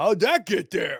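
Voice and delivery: high, very loud, belted out exclamation. Voicing Grudge as he finds something on his neck: voicing Grudge. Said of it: "And he goes".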